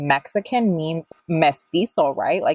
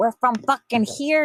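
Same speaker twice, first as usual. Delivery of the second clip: put-on thick, heavy Spanish accent, pitched up; 8 semitones higher than usual. Retelling how his great-grandma answered where in Mexico the family is from: thick accent. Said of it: "like with a thick ass accent".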